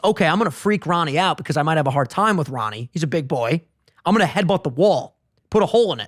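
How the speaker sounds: normal talking voice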